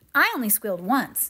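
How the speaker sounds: with pride. Narrator reads a boy recounting how the children reacted to a scare, proud. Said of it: "said David proudly".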